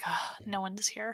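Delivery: sighing with relief. Playing a character who checks a room: relieved sigh. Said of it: "I'm breathing a sigh of relief".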